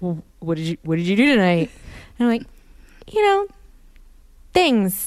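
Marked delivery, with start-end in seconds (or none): 0.0-1.7 put-on male voice. Retelling a conversation about the night, in a put-on man voice. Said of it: "I'll try and speak in a man voice".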